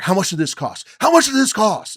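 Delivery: very high, very loud, shrill, huffy angry yelling. Retelling coming in over melted ice cream, replaying an angry huff. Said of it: "I came in all in a huff".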